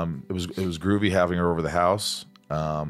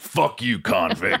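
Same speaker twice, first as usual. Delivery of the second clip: gruff put-on voice; 3 dB louder than usual. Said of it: "that gruff".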